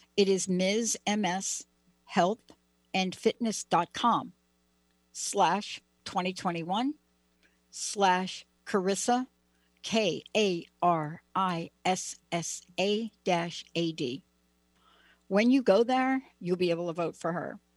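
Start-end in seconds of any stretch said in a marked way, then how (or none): 0.2-14.2 very slow, unhurried, much slower delivery. Host giving viewers the voting website, taking their time, very slow. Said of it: "I'm going to take my time in doing it".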